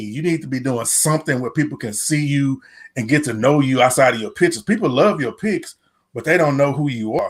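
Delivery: normal talking voice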